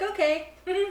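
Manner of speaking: mock-polite, high-pitched voice.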